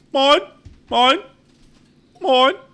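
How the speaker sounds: high, loud, put-on seagull call. Comparing animal sounds with friends, imitating a seagull's cry. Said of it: "Seagull sounds like mine".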